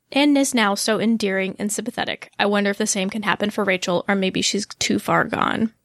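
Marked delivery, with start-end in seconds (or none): none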